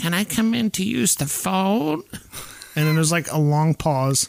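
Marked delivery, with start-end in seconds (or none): 0.0-2.0 weird, goofy put-on voice, high and slow. Retelling a scene where someone at the door asks to come in: imitating a weird, silly voice. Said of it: "starts talking in this weird, silly voice".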